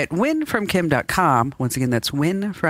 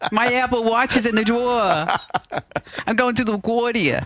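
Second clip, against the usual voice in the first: played-up, showy New Jersey accent, pitched higher; 8 semitones higher than usual. Showing how a New Jersey accent sounds after being teased: showing off a New Jersey accent. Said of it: "I have a New Jersey accent".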